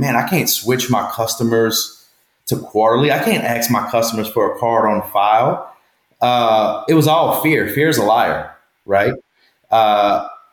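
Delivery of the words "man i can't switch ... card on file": usual speaking voice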